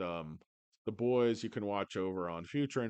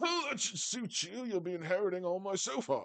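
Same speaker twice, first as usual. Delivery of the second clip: very high-pitched posh British grandfather voice; 10 semitones higher than usual. In a comedy bit, answering a grandchild: British-accent Grandpa Chamath. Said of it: "why do you have a British accent?".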